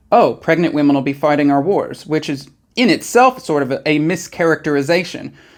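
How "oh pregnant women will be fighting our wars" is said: plain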